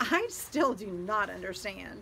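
exasperated, baffled, frustrated voice, slow. Told the FBI is willing to help, a confused listener presses on; frustrated. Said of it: "[name] exclaimed in frustration".

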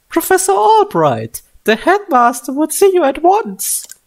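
put-on female character voice. Reading a game character's line that summons the professor: voicing her line in her voice. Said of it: "She has that voice, so I can use that voice too".

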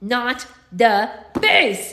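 loud growl forced through clenched teeth. Fighting an ice spider, gripping its fangs, growled through clenched teeth. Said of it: "I growled between clenched teeth".

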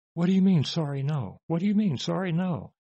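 hollered, high yell. Retelling how a man demanding money reacted to a refusal, imitating a man yelling. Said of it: "he starts yelling at me".

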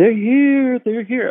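put-on shrill, very high screaming. Speaker retells the end of a movie, imitating Kevin McCarthy screaming. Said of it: "he's screaming".

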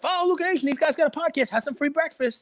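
very high, shrill street-hawker yell. Retelling how someone yelled at people taking free food: imitating Daryl yelling. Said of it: "but he's yelling".

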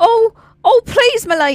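very high, hammy, bad Cockney orphan accent. Playing a character begging a sword-drawing lady: pauper Cockney orphan accent. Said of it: "the worst, like, you know, thespian, like, just doing, like, the most pauper kind of Cockney, um, orphan accent".

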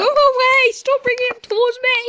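frightened panic, very high and rushed. Gamer begging someone to stop bringing a player toward them, scared and panicking. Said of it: "I'm scared!".

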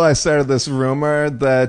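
normal talking voice

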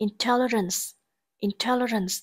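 intelligence stressed on second syllable, in-TEL-ligence. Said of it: "trọng âm rơi vào âm tiết thứ hai".

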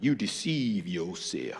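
hushed, quiet, soft low-key tone. Retelling the father's answer to a young man comparing sizes, imitating dad's quiet voice. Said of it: "in his quiet voice".

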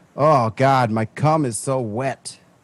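put-on guy voice.

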